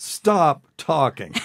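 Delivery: firm, authoritative, commanding, loud and high. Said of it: "You had such a commanding tone".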